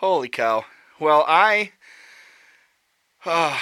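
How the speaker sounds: loud, breathless laughter, spoken very slowly. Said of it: "I can hardly breathe".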